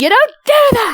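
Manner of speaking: shouting out. She whips around after putting two and two together, yelling out. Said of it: "just yell out".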